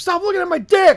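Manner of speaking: play-acted, very high, panicky blurted outburst. Retelling a movie scene where a guy turns to the man beside him: imitating a panicked outburst. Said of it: "he's, like, panicking".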